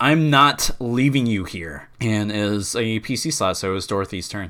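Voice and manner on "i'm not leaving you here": loud shouting battle yell. A character firing his rifle at a creature, yelling. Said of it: "which he yells".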